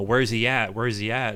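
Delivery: ordinary delivery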